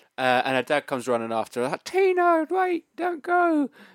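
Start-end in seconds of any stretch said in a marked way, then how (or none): 1.9-3.7 very high-pitched, squeaky, slow pleading voice. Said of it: "Was it that high pitched?".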